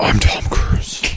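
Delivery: slow, whispered, deliberately bad put-on superhero growl. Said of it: "That was a terrible Batman voice".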